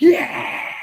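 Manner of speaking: ecstatic, loud, wild celebrating cheer. Retelling a dad celebrating a touchdown in front of his kids: imitating a dad cheering wildly. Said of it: "He going bananas".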